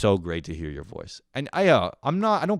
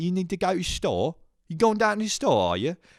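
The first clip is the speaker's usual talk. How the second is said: put-on Cockney accent, very high voice; 10 semitones higher than usual. Retelling how he would reply whenever someone said something, in a Cockney accent. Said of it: "we just do the the Cockney accent".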